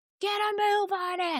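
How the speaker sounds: high, mock yelling in a gym teacher voice.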